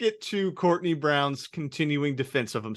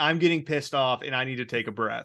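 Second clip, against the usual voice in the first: normal talking voice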